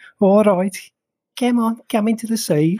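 put-on Brummie accent. Recalling beachgoers from birmingham at the seaside, imitating a birmingham accent. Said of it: "you'd just be hearing".

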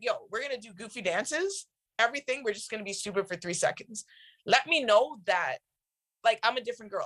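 normal talking voice

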